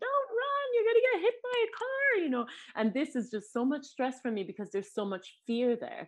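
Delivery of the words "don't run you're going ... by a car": play-acted, very high, scared, fearful yell. Retelling warning small children running into a parking lot: imitating own screaming. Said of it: "I'm screaming".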